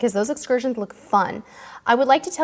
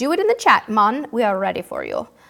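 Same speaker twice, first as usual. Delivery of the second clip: bad, put-on, sing-song Jamaican accent. Host addressing the live chat viewers, in a bad Jamaican accent. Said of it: "that was a really bad Jamaican accent".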